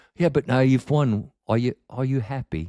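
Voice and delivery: fake English accent held throughout. Retelling other people's questions to the speaker, in a put-on english accent. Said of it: "I'm just keep doing the accent".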